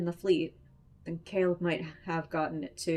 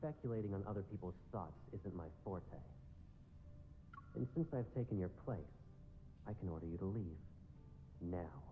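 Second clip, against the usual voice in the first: speaking lower; 10 semitones lower, 16 dB quieter than usual. Narrator reading Caleb ordering a man to leave: lower voice. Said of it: "he responds in a lower voice".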